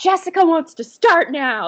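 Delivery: piercing, loud, very high-pitched scream. Retelling what she screamed over people who wouldn't stop talking, retelling a loud scream. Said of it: "she just like screamed".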